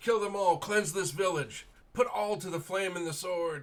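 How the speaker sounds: shrill, very loud, fanatical high priest screaming. Narrator voicing the high priest's order to his followers, high priest yelling. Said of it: "The priest, the high priest, yells out".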